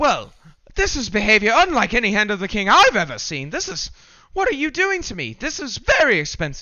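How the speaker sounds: appalled, swooping indignation. Game master voicing a man watching the player catch up to him, appalled. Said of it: "the man just looks at you appalled".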